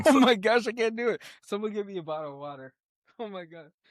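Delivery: speaking through pain. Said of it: "I just got a really bad Charlie horse".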